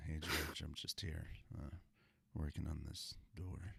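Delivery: soft, easygoing, relaxed tone. Acting out Harrison Ford talking to George: soft-spoken Harrison Ford impression. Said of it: "this is my Harrison Ford".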